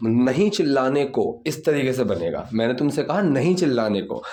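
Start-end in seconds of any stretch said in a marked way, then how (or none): none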